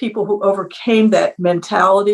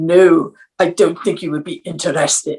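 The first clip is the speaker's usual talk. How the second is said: put-on German-accented English; 3 semitones lower than usual. Retelling a teacher's reply to a student asking about computer camp, Mister Geschwind's German accent. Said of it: "he said in his German accent".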